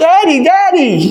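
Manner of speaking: mock very high, small, frightened child's cry. A father retells his little girl waking scared at 3 a.m., imitating a scared child calling. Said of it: "gets scared 3 a.m".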